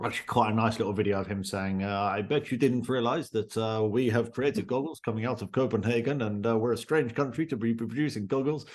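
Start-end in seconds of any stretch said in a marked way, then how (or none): 1.8-8.7 put-on speaking in a Russian accent. Quoting a copenhagen company founder's video, in a russian accent. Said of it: "That's a brilliant Russian accent".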